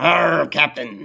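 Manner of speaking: put-on pirate voice and accent. Joking about the word captain, saying it like a pirate. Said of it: "saying it like a pirate".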